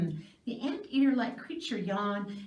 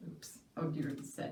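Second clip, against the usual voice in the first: usual speaking voice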